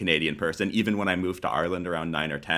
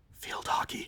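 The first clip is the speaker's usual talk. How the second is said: soft, hushed whisper, barely heard. Listing sports played, whispered so not many people hear. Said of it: "I'm going to whisper this one so not many people hear".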